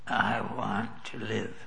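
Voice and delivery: slow, weak, rasping, barely-there voice. Retelling what a woman who could barely talk said, imitating a raspy voice. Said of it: "with just a raspy voice".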